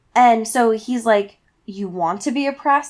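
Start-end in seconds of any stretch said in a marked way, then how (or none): 1.6-2.9 smooth, silky delivery. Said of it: "he's doing it in this like silky voice".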